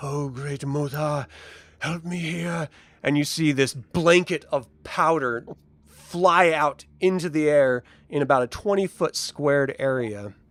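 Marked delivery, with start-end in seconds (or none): 0.0-2.7 hushed half-whisper under the breath. Voicing a figure who starts half-whispering a prayer: half-whispering a prayer. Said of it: "you hear him start whispering words".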